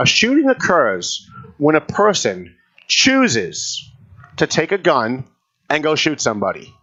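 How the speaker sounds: slow, deliberate delivery. Answering a question about shootings, the speaker says it slowly so it sinks in. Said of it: "I'm going to say this slowly".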